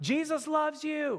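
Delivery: blurted, high, full-volume, top-of-the-lungs scream. At the cashier, speaker imitates the woman in the wheelchair: retelling a top-of-lungs scream. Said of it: "screams it at the top of her lungs".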